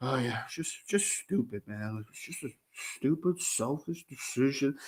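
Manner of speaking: low, soft mumble without conviction. Mocking how Urban Meyer answered in that thing: mumbling like Urban Meyer. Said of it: "That was exactly Urban Meyer in that thing".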